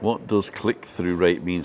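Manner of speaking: ordinary talk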